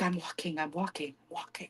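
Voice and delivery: very quiet, hushed whisper, barely under the breath. Describing how she whispered to him walking into an event, imitating a whisper. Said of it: "the way they whispered".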